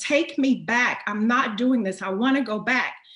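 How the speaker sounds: mock heated, protesting yell. Retelling how she yelled at a man to take her back, reenacting her yelling. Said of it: "So I'm yelling at this man".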